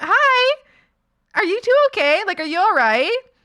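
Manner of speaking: put-on bright, high-pitched Valley Girl customer service voice. Retelling checking on two people from a window, in a valley girl customer service voice. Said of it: "I had my customer service voice on".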